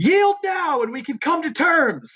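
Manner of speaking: very high, slow, drawn-out yell. Voicing a character in a fight demanding surrender: yelling in character. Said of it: "he's just yelling".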